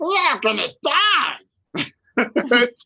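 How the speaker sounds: slow, drawn-out, high, swooping creature voice. Showing the others the old character voice: Kuo-toa voice. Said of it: "My Kutoan voice was".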